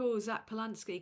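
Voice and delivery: ordinary delivery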